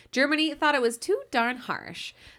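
mock patronizing, superior, talking-down delivery. Speaker starting a history rundown of the buildup to the war, condescending. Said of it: "I said that really condescendingly".

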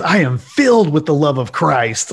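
acted out, spoken with real-sounding anger. Quoting a movie character's line from a comment: imitating an angry line. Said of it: "really angrily".

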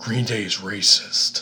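seductive, laid-on, really sultry voice. Retelling a woman who took the mic on stage, in a mock-sultry voice. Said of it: "just says in a really sultry voice".

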